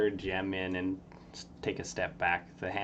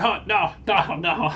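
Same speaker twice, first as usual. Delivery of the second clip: very high, loud dismayed cry, stretched out; 11 semitones higher, 13 dB louder than usual. Voicing a distant character heard down the hallway: imitating Crawl in dismay. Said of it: "You can sort of hear Crawl being like".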